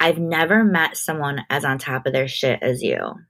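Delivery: ordinary talk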